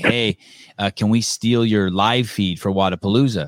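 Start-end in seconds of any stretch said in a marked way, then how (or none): none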